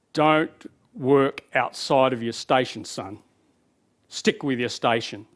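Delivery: very low, deep fatherly dad voice. Describing inner voices heard before a major presentation: imitating a dad's voice. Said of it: "And then you hear your dad".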